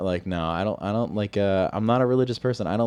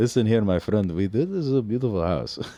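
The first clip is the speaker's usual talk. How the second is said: put-on Russian accent. Mocking real-estate agents after a two-day course: mock Russian accent. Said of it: "Is it racist for me to do a Russian accent?".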